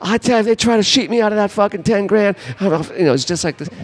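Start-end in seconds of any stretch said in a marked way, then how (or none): 0.0-2.4 imitated screaming, much higher pitch. Retelling the guy across the street on his phone, retelling a scream into a phone. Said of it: "He's screaming on the cell phone going".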